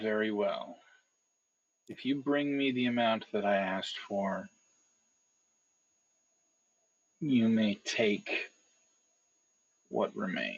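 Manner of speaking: speaking through clenched teeth. She agrees to a deal she looks ready to refuse, through gritted teeth. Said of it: "she kind of grits her teeth and then says".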